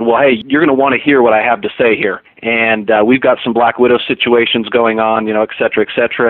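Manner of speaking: ordinary talk, nothing marked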